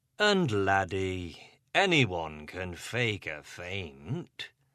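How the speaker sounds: slow, patronising, condescending drawl on faint. Reading a story aloud, the chief inspector's next remark: great condescension. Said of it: "said with great condescension".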